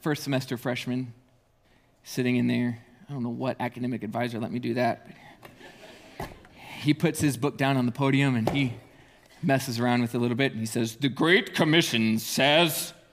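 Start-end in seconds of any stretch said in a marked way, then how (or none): 11.0-12.9 grand, booming, slow voice-of-God delivery. Retelling how he spoke from the podium, in a put-on voice of god. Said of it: "voice of God".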